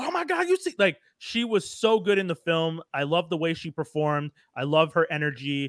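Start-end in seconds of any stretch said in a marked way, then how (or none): 0.0-0.7 put-on panicked, very high-pitched New York accent. Describing a film character, imitating a stereotypical New Yorker freaking out. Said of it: "the stereotypical New Yorker freaking out".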